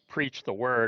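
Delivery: ordinary delivery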